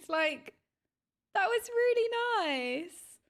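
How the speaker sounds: emotional, choked-up tone. Reacting to favourite creators naming their dungeons, getting choked up. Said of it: "I'm getting all choked".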